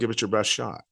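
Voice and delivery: put-on sarcastic tone. Retelling what a man sarcastically said to him: mock-sarcastic retort.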